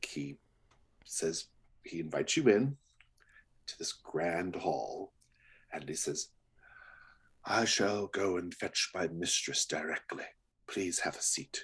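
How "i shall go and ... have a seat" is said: put-on extremely old, aged butler voice. Voicing an extremely old butler inviting guests to sit: extremely old butler voice. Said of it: "greeted by an extremely old butler".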